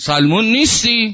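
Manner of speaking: put-on very loud, very high, drunken bellowing roar. Narrating a man shouting over someone's tent, retelling a drunken roar. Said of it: "یک عربده مستانه کشید".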